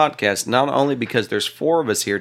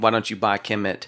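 ordinary delivery

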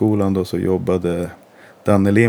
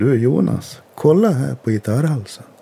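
put-on Dalarna dialect, higher pitch; 6 semitones higher than usual. Retelling a guitar teacher's advice: imitating Danne Lindblom's Dalarna dialect. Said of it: "han har lite dalmål".

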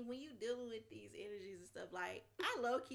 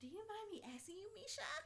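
put-on very high, soft, girlish voice; 10 semitones higher, 6 dB quieter than usual.

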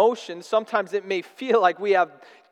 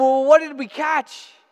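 mock eager, high, excited shout; 7 semitones higher, 3 dB louder than usual. Retelling yelling to a dad kneeling by a trap: imitating own past yell. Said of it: "I yelled at him".

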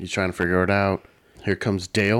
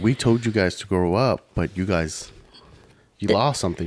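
ordinary talk, nothing marked

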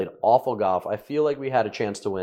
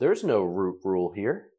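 imitated flat deadpan delivery; 2 semitones lower than usual. Retelling the guy's answer about taking relief off a root: imitating a deadpan reply. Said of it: "the guy looks at me deadpan".

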